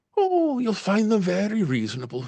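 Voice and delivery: acted sing-song Irish brogue. Narrator voices a woman answering a question about her rates: Irish accent. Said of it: "I apologize for my Irish accent".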